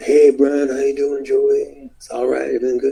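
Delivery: easygoing, stoned-sounding, relaxed voice. Retelling phone calls with Piper: Piper sounding stoned. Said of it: "he always sounded like he was three joints in".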